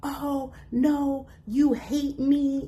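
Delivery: mock yell, high-pitched and slow.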